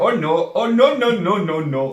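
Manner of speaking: put-on Indian accent, high, very slow, drawn-out. Speaker retells repeating the kids' phrase to them, in an indian accent. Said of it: "I started doing it in an Indian accent".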